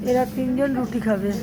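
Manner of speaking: normal talking voice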